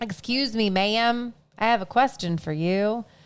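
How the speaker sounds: imitated South Dakotan accent. Speaker mocks how a woman talks, imitating a South Dakota accent. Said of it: "They sound like they're from South Dakota".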